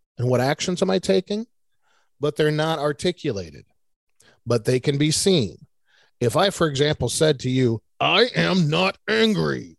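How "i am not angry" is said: very drawn-out, rough, creaky, angry growl. Showing how tone contradicts the words spoken, angry tone. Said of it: "The tone I just used says, oh, hell yes, I am".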